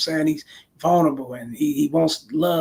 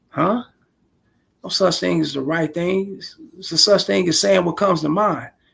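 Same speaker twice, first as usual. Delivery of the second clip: usual speaking voice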